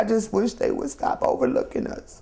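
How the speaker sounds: words pushed through tears. A low-income speaker addressing listeners, crying. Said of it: "I'm sorry for crying".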